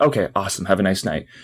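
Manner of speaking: ordinary talk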